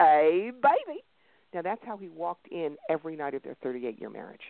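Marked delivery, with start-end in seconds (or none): 0.0-1.0 put-on broad Texas accent. Acting out a husband's nightly greeting when he walked in, broad Texas accent. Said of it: "the big Texas accent says".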